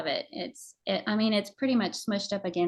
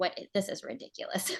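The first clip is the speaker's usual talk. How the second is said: mock muttering to oneself, quieter; 5 dB quieter than usual. Retelling going out to break up frozen water: imitating muttering under breath. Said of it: "kind of muttering under my breath".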